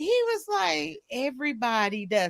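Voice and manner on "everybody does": mock casual, nonchalant, offhand, matter-of-fact tone. Retelling someone's reply to being found out: imitating a nonchalant remark. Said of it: "How do you say that so sin-, nonchalantly?".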